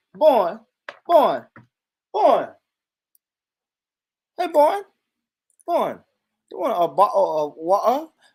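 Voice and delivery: botched, failed attempt at a British accent. Speaker recalls not managing it on the live stream: failed British accent. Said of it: "I couldn't do a British".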